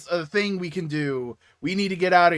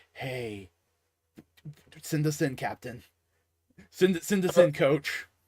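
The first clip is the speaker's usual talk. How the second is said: whisper, quieter; 7 dB quieter than usual. Retelling how two characters ask Batman to send them in: imitating a whisper. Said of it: "they just whisper to Batman".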